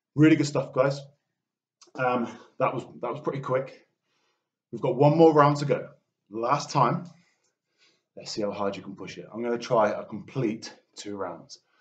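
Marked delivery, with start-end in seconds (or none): 0.2-9.3 breathless, panting, winded encouraging tone. Leading a workout between rounds, urging the group on, out of breath. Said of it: "you can hear I'm out of breath".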